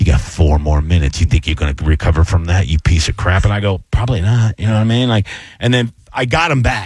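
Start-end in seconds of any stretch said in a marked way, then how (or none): 0.0-3.4 very low, deep, wicked evil voice. Recalling an opening that fell flat, voicing the evil voice in his head. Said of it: "my evil voice goes".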